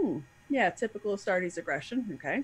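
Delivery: unbothered, nonchalant, faintly superior, condescending tone. Imitating a character's offhand remark about others: nonchalant, looking down his nose. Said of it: "very nonchalant about them".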